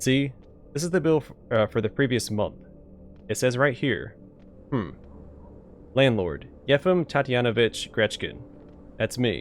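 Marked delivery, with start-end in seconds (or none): none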